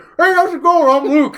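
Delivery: very high, loud, chewing, talking with mouth full. Retelling how Luke introduced himself while eating: imitating Luke talking mouth-full. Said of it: "mouthful of shit".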